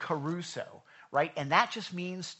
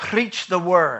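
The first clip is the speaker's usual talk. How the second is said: raised, put-on Scottish accent; 12 dB louder than usual. Quoting a scripture line the way they always say it, in a Scottish accent. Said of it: "Always with a Scottish accent".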